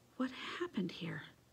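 very quiet, soft, under the breath. Grandfather, picking his way across broken plates in the ransacked kitchen, asks; said quietly. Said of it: "he said quietly".

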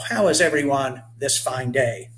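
ordinary delivery

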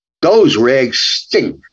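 put-on Brooklyn mob accent. Explaining which lines came from the speaker's mom, quoting her: Brooklyn mob accent. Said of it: "the Brooklyn accent, like in a mob accent".

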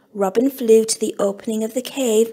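ordinary delivery, nothing marked

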